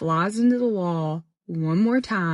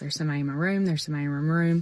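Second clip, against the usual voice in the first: normal talking voice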